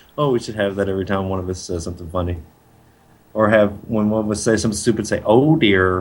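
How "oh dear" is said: poorly done put-on cartoon dog voice. Suggesting a sound for stupid remarks: Droopy Dog impression. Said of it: "Which is Droopy Dog, by the way".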